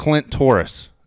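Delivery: high, loud, put-on shouting. Retelling a mom yelling a username into the phone, retelling a yell into the phone. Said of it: "she's yelling in the phone".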